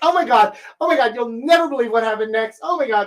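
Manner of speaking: fast, high, rushed, thrilled excited gush. Explaining signs that a woman is excited, the speaker demonstrates her: fast, high excited voice. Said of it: "speaking fast and her voice is high".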